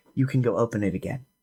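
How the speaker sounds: hushed voice. Voicing a lieutenant who quietly tells a player to open the door: whispering. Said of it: "whisper to you".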